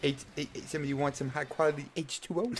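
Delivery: goofy character voice, hushed and soft. Recalling renting a comedy over and over, Waterboy impression. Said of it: "how many times have you practiced that voice?".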